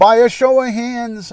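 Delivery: very high, loud, shouted yell. Addressing the audience into a mic before asking for a show of hands, yelling. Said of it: "I'm sorry that I'm yelling into it".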